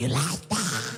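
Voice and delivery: small, demonic voice. Retelling own dirty talk from one night: imitating own little demon voice. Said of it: "Sounded like a little demon".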